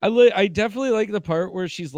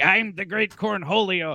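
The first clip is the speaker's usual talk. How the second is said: grand, announcing cartoon voice; 3 semitones higher than usual. Retelling a classmate's repeated joke, imitating a classmate doing Beavis and Butthead. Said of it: "and he's like".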